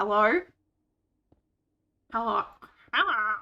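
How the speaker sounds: fake nasal voice, slowed. Pinching the nose and trying a voice again: pinched-nose Squidward voice. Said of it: "I'm trying to do a voice again".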